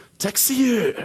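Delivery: very high-pitched, put-on Japanese accent. Showing how to say a word so taxi drivers understand: put-on Japanese-style accent. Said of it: "the accent".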